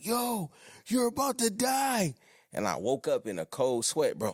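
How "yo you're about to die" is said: play-acted, very high-pitched, frantic scream. Retelling a dream during a nap: imitating someone screaming. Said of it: "somebody was screaming at me like".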